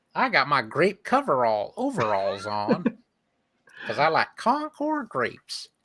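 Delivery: cartoon mascot voice, swooping pitch. Describing a grape jelly commercial mascot, a speaker talks in a Jerry the Bear mascot voice. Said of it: "That's the voice".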